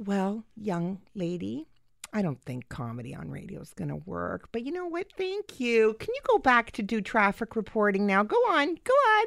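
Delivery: patronizing, sing-song, condescending talking-down tone. Retelling how a man answered your pitch for radio comedy, mock-condescending tone. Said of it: "You sounded really condescending".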